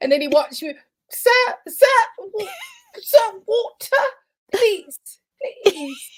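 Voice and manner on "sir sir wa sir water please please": very high, pleading, begging put-on British accent. Voicing the caught critter holding the bars and watching, in a British accent. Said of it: "I give him a British accent going".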